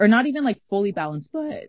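voice cracking. Mid-conversation with another speaker, voice cracking. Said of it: "my voice cracked".

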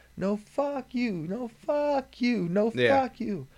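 acted-out very high, very slow, drawn-out shouting. Retelling two sides yelling back and forth: imitating people yelling. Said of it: "they're yelling from across the street".

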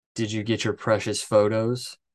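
normal talking voice

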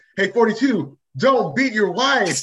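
loud, high-pitched shout. Retelling how Elliot yelled at a player who talked back to the ref: retelling Elliot's yell. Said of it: "Elliot yells out".

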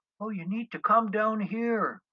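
calm, very high, calling out as if from afar. Declan, vanishing into the fog, calls back to his friends, calmly calling out. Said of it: "Declan calmly called out to us".

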